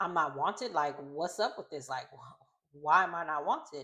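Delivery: mad, demanding, protesting angry tone. Retelling an episode where Haley is told not to come: imitating Haley getting mad. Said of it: "she gets mad 'cause she's just like".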